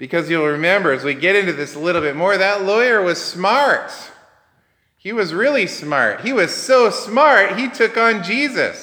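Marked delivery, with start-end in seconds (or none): 2.4-8.8 sarcastic, mocking, tongue-in-cheek praise. Describing a lawyer to listeners, then apologizing for it: sarcastic. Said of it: "I'm being sarcastic".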